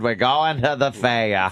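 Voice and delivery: put-on Down East Maine accent. Mimicking the comedian's line about going to the fair: imitating a Maine accent. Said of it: "That fucking Mean accent".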